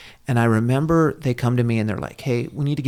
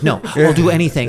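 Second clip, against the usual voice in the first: put-on pleading, higher and louder; 4 semitones higher, 6 dB louder than usual. Retelling begging the nurse not to put the catheter in: imitating own pleading. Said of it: "I started, like, pleading".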